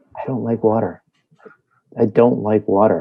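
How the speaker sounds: hushed half-whisper, said twice. Sending a message in character through a little copper wire: half-whispering. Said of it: "I'm just whispering a message".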